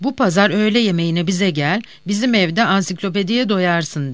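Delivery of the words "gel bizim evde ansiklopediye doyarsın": plain reading voice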